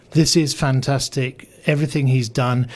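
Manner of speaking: normal talking voice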